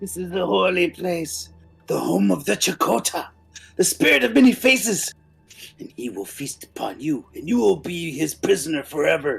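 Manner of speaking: screaming through laughter and tears. Voicing a captive dragged across a table: laughing, crying and screaming. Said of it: "Start laughing and crying and screaming".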